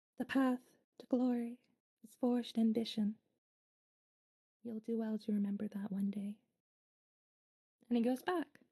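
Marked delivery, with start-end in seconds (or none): 0.2-6.3 barely audible, very quiet voice. Voicing a character speaking to the player: barely audible voice. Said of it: "It's barely audible".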